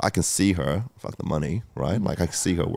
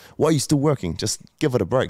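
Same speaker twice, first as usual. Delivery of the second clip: put-on high, distressed, upset scolding tone; 6 semitones higher, 4 dB louder than usual. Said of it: "super upset".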